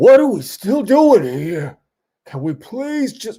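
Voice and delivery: put-on very high-pitched Brooklyn accent. Imagining [name] at a hundred and seven, [name] with a Brooklyn accent. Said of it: "why Shaun has a Brooklyn accent all of a sudden".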